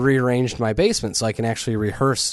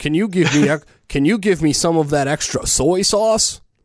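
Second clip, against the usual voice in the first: mocking put-on voice, pitched much higher; 6 semitones higher, 4 dB louder than usual.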